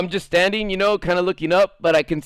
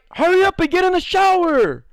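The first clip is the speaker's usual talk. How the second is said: very high, shrill, drawn-out furious angry scream; 11 semitones higher, 3 dB louder than usual. Retelling how a group kept screaming at a man, retelling a scream. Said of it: "they kept screaming at him".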